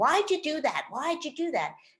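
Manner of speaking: accusing, blaming, shaming voice, high and swooping. Illustrating the regret voice that comes in about past choices, shaming, blaming voice. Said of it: "the shaming, blaming voice comes in and says".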